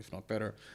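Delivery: very quiet, soft American accent. Comparing broadcast trucks and teams, finishing the point: american accent. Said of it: "I love how you said that with an American accent".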